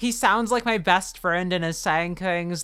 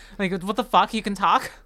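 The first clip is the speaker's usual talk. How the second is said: ordinary talk, nothing marked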